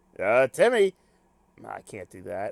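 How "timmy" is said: botched, raised, put-on cartoon dad voice. Trying out a voice for a character: Timmy's dad impression. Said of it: "I can't do a Timmy's dad impression".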